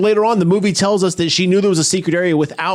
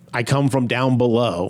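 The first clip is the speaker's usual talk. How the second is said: usual speaking voice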